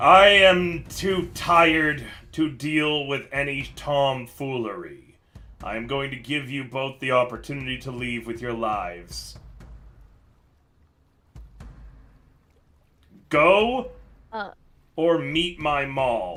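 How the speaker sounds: very low, deep, rumbling dwarf voice. Narrating a game, voicing a dwarf who speaks to two intruders: very low rumbling dwarf voice. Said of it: "The dwarf speaks up in a very, very low voice that seems to almost rumble the rock around him".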